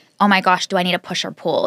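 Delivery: ordinary delivery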